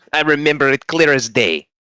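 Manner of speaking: put-on, vaguely European accent. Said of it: "Why why are you suddenly vaguely European?".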